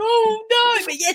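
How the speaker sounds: high, loud scream of dismay. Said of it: "I can see her screaming".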